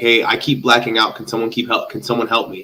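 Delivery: plain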